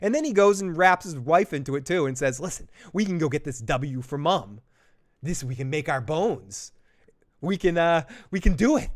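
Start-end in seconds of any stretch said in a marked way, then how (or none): 2.4-8.9 put-on manic, half-crazy, unhinged delivery. Retelling Jace urging his wife to join him: imitating a crazy-sounding voice. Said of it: "he sounds crazy when he's saying this".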